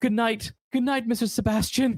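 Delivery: high-pitched and frightened. Retelling a scene where Emil leaves the office: imitating Emil shaking with fear. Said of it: "as he's walking out the door and he's shaking".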